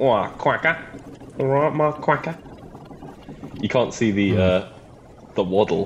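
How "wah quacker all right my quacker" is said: high, quacking duck voice in a Cockney accent. Describing different duck voices, doing a Cockney duck voice. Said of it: "a Cockney one that's like".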